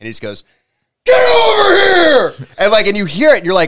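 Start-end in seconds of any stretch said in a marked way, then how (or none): 1.0-2.5 very high, loud shout. Retelling a man being asked for the Scorpion voice, the speaker does the Scorpion voice. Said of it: "do the Scorpion voice".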